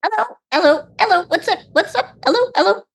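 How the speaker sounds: very high, tiny, chittering squirrel voice. Voicing squirrels greeting the party: squirrel voice. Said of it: "I need to do something other than my child voice for the squirrels".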